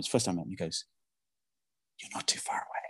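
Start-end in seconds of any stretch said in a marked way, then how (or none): 2.0-2.8 hushed, breathy, offhand whisper. Retelling what a golf pro said to him while walking past: imitating someone whispering. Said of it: "he whispers to me".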